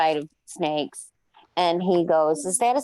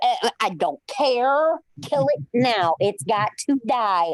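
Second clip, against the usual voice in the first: mock tearful screaming and crying, slower; 4 semitones higher than usual. Telling a story about being up on a fence, retelling screaming and crying. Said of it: "I'm up on a fence screaming and crying".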